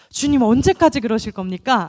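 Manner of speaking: loud, demanding, confrontational challenging tone.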